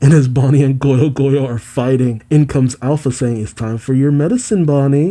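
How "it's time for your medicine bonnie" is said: plain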